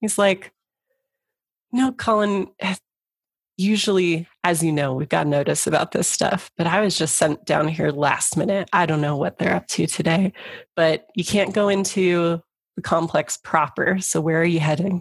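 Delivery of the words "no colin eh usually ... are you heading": conspiratorial, confiding, just-between-us inside tone. Voicing a security chief who leans in to a player: leaning in conspiratorially. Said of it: "he kind of leans in a little conspiratorially".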